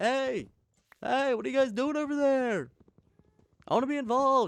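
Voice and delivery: put-on very high call, as if from far away. Describing an unseen child in the game calling out, yelling from afar. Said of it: "it's like yelling from like afar".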